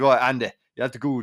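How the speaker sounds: put-on failed Scottish accent sounding Irish. Retelling what a Russian man said at their first meeting in Malta, failed Scottish accent sounding Irish. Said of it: "That's not Scottish. Is that Scottish? No, that's Irish".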